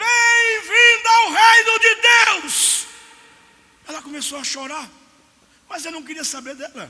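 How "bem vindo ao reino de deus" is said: very loud, very slow, booming, drawn-out high shout. Retelling his own shout at a woman: retelling his own shout. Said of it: "e eu gritei".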